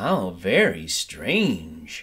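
murmuring. Narrating a crowd of bats hearing a strange young bat's story, murmured. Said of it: "they all murmured".

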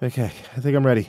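usual speaking voice

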